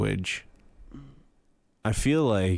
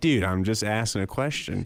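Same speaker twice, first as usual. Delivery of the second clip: ordinary talk, nothing marked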